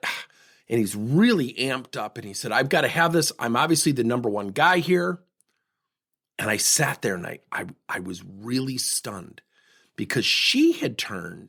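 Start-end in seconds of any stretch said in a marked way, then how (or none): none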